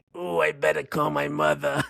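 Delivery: gravelly, creaking put-on voice. Answering a request to do a movie actor's voice: Harvey Fierstein impression. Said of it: "can you give us a Harvey Fierstein impersonation?".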